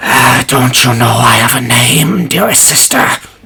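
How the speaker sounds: ragged, torn-apart undead creature voice. Game master voicing an undead creature addressing its sister, in a torn voice. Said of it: "this just torn voice coming from this undead creature".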